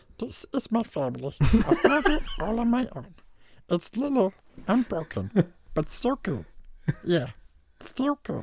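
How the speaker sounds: very high, swooping, sing-song put-on voice. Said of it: "I'll do a different quote".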